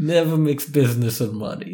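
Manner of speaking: put-on Italian man's accent. Repeating a saying back to the other speaker, in a put-on Italian guy accent. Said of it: "That's your impression of an Italian guy".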